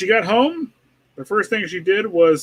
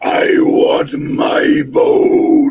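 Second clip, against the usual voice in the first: very angry, loud, furious booming voice; 10 semitones higher, 6 dB louder than usual. In a read-aloud story, the narrator voices the mysterious voice, very angry and loud. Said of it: "Now it sounded very angry. And it was so loud".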